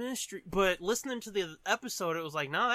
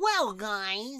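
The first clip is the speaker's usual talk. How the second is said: put-on over-the-top nerdy voice; 4 dB louder than usual. Imitating her Velma while complaining the voices sound alike: over-the-top nerdy Velma voice. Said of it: "her Velma is, like, over the top nerdy".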